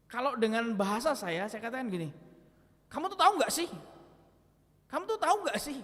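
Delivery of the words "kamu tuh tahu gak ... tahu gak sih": harsh, stern, fast, pitched-up scolding tone. Showing how a rebuke sounds in everyday words, said harshly. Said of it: "Jadi pengucapannya itu keras".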